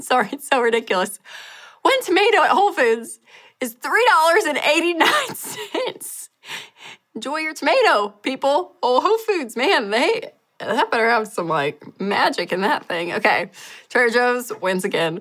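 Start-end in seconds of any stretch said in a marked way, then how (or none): 0.0-6.3 very high, giggling, laughing words. Comparing grocery prices at two stores, reading out the next price: laughing while speaking. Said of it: "I can't even say it without laughing".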